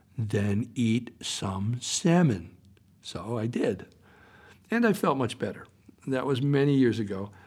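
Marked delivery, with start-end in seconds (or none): 0.2-2.6 very slow, deliberate, each word drawn out. Quoting a woman who pulled the speaker close, said very slowly. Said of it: "said very slowly".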